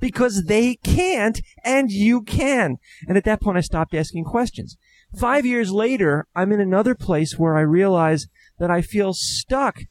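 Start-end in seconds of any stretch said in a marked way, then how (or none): 0.0-2.8 put-on exasperated, fed-up tone, as if obvious. Retelling how the voice answered when asked why not somebody else, retelling an exasperated voice. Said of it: "the voice was exasperated".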